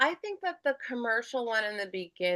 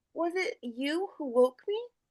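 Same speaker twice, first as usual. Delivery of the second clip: sweet princess character voice, higher; 8 semitones higher than usual. Performing a princess just woken by true love's kiss: sweet Disney princess voice. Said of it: "character voice of that, like, "I'm a sweet, you know, princess character,"".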